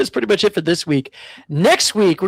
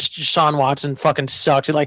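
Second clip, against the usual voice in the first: ordinary talk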